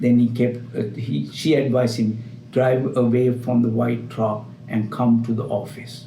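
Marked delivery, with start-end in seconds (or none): none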